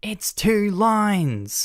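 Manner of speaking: high, full-volume scream, lines stretched out. Recounting a speakerphone call from a spouse, retelling a yell at full volume. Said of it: "she's yelling at the top of her lungs".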